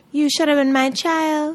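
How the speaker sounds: attempted, put-on Trinidadian accent. Quoting a soca artist who always says this to her: attempted Trinidadian accent. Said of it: "I can't do the accent".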